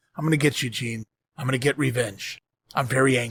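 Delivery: acted, utterly calm, very low murmur. Retelling what a man said to someone in front of him, imitating a very calm voice. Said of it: "in the most calmest voice possible".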